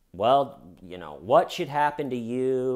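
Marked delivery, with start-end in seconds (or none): none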